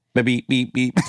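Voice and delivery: put-on robotic voice. Joining an improvised alien scene, in a robot voice. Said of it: "He's a robot".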